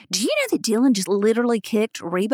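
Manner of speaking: normal talking voice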